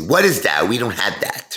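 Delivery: mock rude, snotty voice with real nasty attitude. Retelling what a rude waitress said: imitating a nasty waitress. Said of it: "very nasty".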